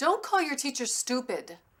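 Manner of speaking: firm, commanding tone. Demonstrating a parent answering a child who called their teacher stupid: commanding.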